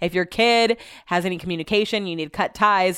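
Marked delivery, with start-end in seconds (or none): none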